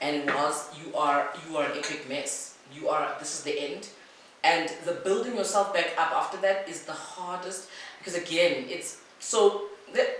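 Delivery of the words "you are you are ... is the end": normal talking voice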